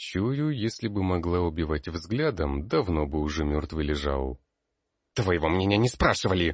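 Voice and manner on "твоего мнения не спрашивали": curt, fast, snapping barked voice. An old woman rebuffs the narrator, barked. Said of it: "рявкнула старуха".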